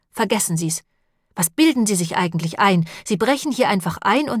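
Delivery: ordinary delivery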